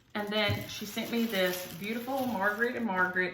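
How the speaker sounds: ordinary talk, nothing marked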